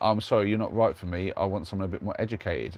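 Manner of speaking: ordinary delivery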